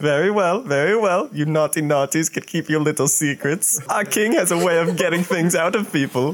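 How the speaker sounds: goofy, silly, high, made-up guard-captain voice. Game master voicing the guard captain to the players, in a stupid guard captain voice. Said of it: ""Do you not see the wings and spear? Do you not know who your captain is?" ... So I have [name], stupid voice".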